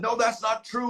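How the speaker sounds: mock heated shouting. Retelling an argument with a man in his face: imitating own past yelling. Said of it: "And I was yelling at him".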